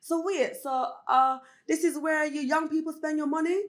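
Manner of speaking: put-on Jamaican accent. Retelling what their dad said at a members club, imitating a jamaican accent. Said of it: "that was meant to be Jamaican accent".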